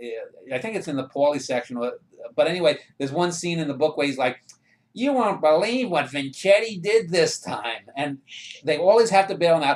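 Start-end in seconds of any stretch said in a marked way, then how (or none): 4.9-7.9 put-on nasal voice, higher pitch. Retelling a lawyer character's line from a book: imitating a nasal-voiced lawyer. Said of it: "is talking in a nasal voice".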